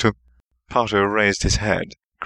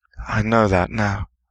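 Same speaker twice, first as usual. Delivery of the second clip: sighing while speaking. A boy answers a warning about going in without backup, sighing. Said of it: "the boy sighed".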